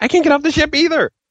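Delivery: play-acted, frantic, panicked, very high-pitched. Retelling being unable to leave the game's first ship: imitating own panic. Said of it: "But I was panicking".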